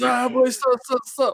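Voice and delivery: mock high scream, every word stretched out.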